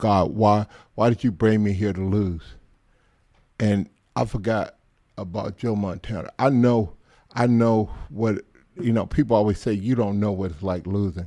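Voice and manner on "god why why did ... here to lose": acted crying, tearful pleading voice. Telling how they sat crying on the sideline during a game; retelling a crying plea. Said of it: "I'm crying, going".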